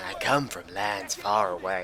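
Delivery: put-on slow, grimy, dirty-old-man drawl. Mocking a game unit's voice line he hates, in a dirty old man voice. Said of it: "He sounds like the dirtiest old man".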